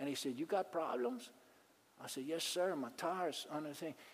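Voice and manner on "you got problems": put-on accent of an old Cajun man. Retelling a roadside breakdown, quoting an old farmer: imitating a Cajun accent. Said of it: "an old man who was a farmer with a Cajun".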